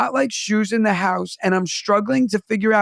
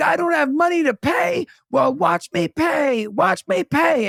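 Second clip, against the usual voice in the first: put-on screaming man's rant, higher pitched; 7 semitones higher than usual. Retelling how a man escorted by police acted: imitating a man screaming. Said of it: "And he's screaming".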